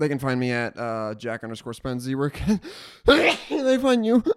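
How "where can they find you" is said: slow, high, laughing through the words. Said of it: "laughing on the line".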